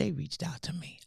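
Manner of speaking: put-on whisper. Retelling what a man told him, imitating someone whispering. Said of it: "why are you whispering?".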